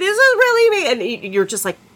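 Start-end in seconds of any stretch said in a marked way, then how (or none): 0.0-0.9 mock, very high, screamed insistent protest. Retelling a scene where she screams at the Doctor: imitating Donna screaming. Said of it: "And she's screaming at him".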